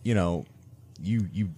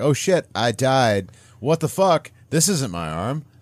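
mock distraught, slow, dawning dismay; 4 semitones higher than usual. Retelling a scene where the character realizes she died: imitating a distraught character. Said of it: "she's distraught because she realized".

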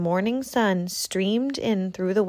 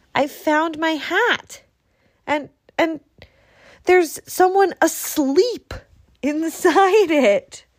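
loud, high cry of amazement; 9 semitones higher, 5 dB louder than usual. Reading a story aloud, Little Hedgehog looks and cries out. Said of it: "he cried".

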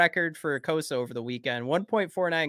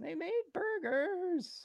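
bad put-on nervous teen cartoon voice, higher and quieter; 9 dB quieter than usual. Joking that a player only brings food for teammates: terrible Morty impression. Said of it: "my terrible Morty impression".

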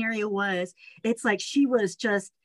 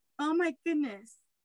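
choked up, on the verge of tears, pitched high; 5 semitones higher, 5 dB quieter than usual. Talking about an honor from someone looked up to: on the verge of tears. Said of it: "don't cry".

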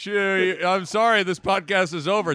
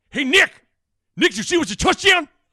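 put-on broadcaster voice, higher and louder; 9 semitones higher, 5 dB louder than usual. Showing the old Greg Sharp impression, once just one line: Greg Sharp impression. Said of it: "the Greg Sharp was just".

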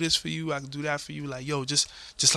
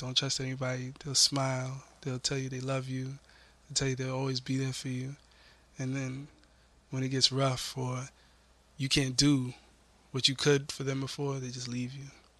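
mock-sad, imitated sad voice; 2 semitones lower, 4 dB quieter than usual. Retelling a video of a celebrity's advice, the speaker quotes him, retelling sad words. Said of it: "and he's sad".

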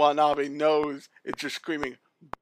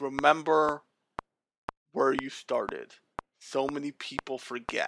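threatening, menacing, ominous tone; 7 dB quieter than usual. Retelling what a character said to Carol and Tuesday: imitating a menacing character.

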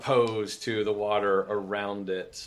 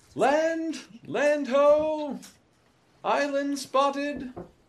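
slow, high, drawn-out sailor's call; 3 dB louder than usual. Voicing a crew member who spots land: crew member calling out. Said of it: "one of the crew calling out".

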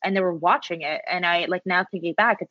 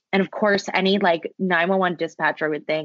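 ordinary talk

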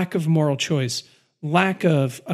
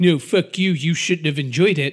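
mock-snooty, condescending put-on voice. Discussing Game of Thrones season 7, the speaker acts out a snooty critic, mock-snooty. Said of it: "I'm not trying to be all like snooty".

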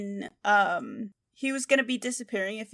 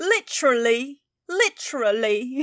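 mock British pronunciation of "literally", louder; 3 semitones higher, 4 dB louder than usual. Showing how english people say "literally": imitating english way of saying literally. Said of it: "how they say the C H in literally".

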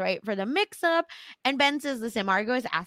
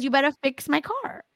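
small, high, mild yell; 5 semitones higher than usual. Retelling how a character confronted someone: retelling a yell. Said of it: "And she yells at him and she says".

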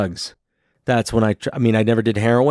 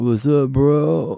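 lazy stoner drawl, words dragged out; 4 semitones higher than usual. Talking about people stuck in a mode, speaker demonstrates a stoner drawl. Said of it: "that stoner draw".

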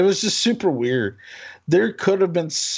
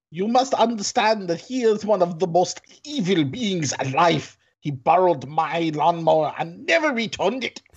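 put-on German accent. Reading aloud a strange quoted sentence in a fake German accent. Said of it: "And a fake German accent".

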